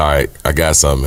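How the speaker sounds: usual speaking voice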